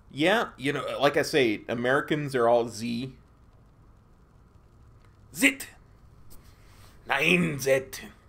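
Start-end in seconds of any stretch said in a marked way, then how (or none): 5.4-8.0 horrible, bad, put-on German accent. Saying 'nine zit' in a horrible German accent. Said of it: "that was a horrible German accent".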